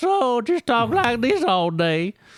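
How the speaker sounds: put-on Alabama accent, very high and swooping. Joking that the ogre characters all have accents: put-on alabama accent. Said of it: "they all have accents like this".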